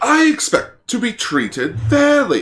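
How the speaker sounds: bad, prim, uptight British accent, very high and swooping. Retelling how a dragon-scorpion kaiju talked, as Lucasite in uptight British accent. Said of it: "I can never do a British accent".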